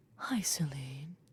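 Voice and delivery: very breathy, very quiet, barely audible voice. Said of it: "with his very, very breathy voice".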